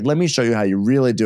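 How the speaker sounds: ordinary talk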